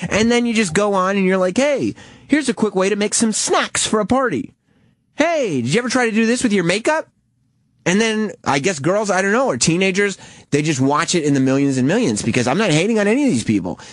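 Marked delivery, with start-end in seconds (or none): 1.6-7.1 gushing, way too eager, high-energy, pitched-up presenter chatter. Mocking how someone talks like a TV actor, in a way too high-energy Disney Channel voice. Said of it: "you're way too high energy".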